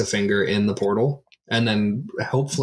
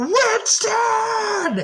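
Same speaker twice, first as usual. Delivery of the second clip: shouting, higher. Calling a companion's name into an open portal, yelling into the portal. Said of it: "You didn't have to yell".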